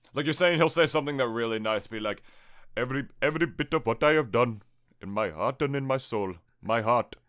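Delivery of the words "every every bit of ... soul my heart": mock, put-on Indian accent. Imitating india's president giving a farewell speech: imitating an indian accent. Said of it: "he has an accent like this".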